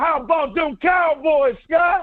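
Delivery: loud, slow, stretched-out, belted shout.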